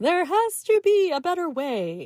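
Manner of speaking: infomercial announcer voice. A teacher talking about students' practice routines, in an infomercial voice. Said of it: "I'm putting my infomercial voice on".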